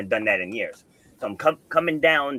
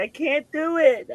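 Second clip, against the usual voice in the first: put-on sobbing, very high, slow and drawn out. Retelling a coaching moment, quoting the woman who couldn't finish; imitating someone crying. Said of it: "And she's crying".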